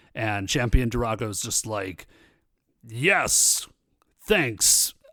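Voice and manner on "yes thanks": grand announcing voice projected to fill a hall. Retelling a scene, voicing Champion Durago: Champion Durago announcing voice. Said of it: "always sound like he is announcing something".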